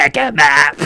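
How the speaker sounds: emperor voice, commanding. Retelling the end of a scene: Emperor voice. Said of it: "the Emperor's at the end going".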